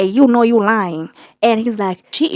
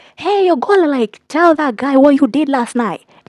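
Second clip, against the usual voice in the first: play-acted, mild half-shout; 3 semitones higher than usual. Retelling hearing a man shouting from outside at night: imitating someone shouting. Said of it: "Mister Fling is just out there shouting".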